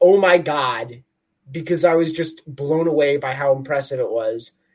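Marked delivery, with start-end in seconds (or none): 0.0-1.0 put-on amazed scream, much slower. Recalling watching a glorious goal live: retelling a scream of amazement. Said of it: "I remember watching it and screaming like".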